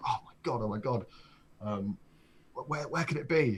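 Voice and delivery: frantic stammering panic, tripping over words, alarmed. Retelling searching for a lost iPod in the library: retelling own panic. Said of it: "And I'm just panicking".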